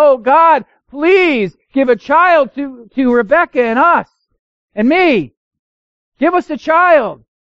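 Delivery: high, slow, drawn-out, imploring pleading cry. Speaker acts out a man crying out to god, acting out a pleading cry. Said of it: "When he pleaded and cried out to God".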